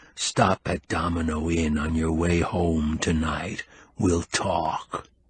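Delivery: low, hushed, conspiratorial half-whisper. After asking aloud for a table, a man adds an aside: conspiratorial half-whisper. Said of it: "In a conspiratorial whisper he added".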